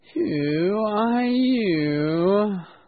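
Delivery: drowsy, lazy, sleepy voice, "you" drawn out. Reading a story aloud, voicing the caterpillar asking Alice in a sleepy voice. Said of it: "said in a sleepy voice".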